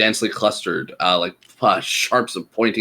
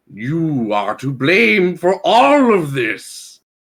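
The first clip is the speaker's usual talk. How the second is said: high, drawn-out, hate-filled beast bellow; 7 semitones higher, 4 dB louder than usual. A woolly mammoth cries out at the players in common, bellowing. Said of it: "he cries at you and bellows in common".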